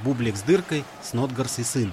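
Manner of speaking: ordinary delivery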